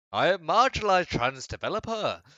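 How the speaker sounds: exaggerated put-on knight voice, very loud and swooping.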